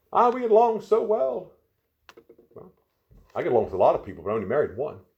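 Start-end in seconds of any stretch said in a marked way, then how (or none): 0.1-1.5 very slow, mocking, pitched-up drawl. The speaker mocks the reasons people give for marrying: mocking. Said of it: "I'm making fun of that".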